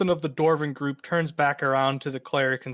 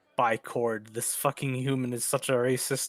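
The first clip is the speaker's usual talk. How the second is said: quieter muttered aside under the breath; 2 semitones lower, 4 dB quieter than usual. Voicing a dwarven merchant guard reacting to a remark: muttering under breath. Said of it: "he mutters".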